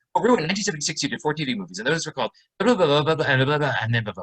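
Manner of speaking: words rushed out rapidly in one continuous stream. Showing how the speaker started prompting rue in interviews: talking fast. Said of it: "I started doing this. ... I'm talking fast".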